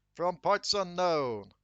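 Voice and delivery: slow, drawn-out ring announcer call.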